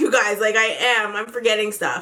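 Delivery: plain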